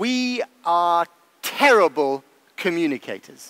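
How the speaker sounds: very slow, deliberate put-on advert voice. Retelling what a former prime minister said in a session: slow deliberate voice like the IKEA ad man. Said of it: "in a very slow and deliberate voice, like the ad man from ikea almost".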